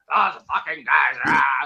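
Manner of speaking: crazy, wild, hardcore ranting delivery. Describing a conspiracy show host to a friend: Alex Jones impression. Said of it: "he talks like this".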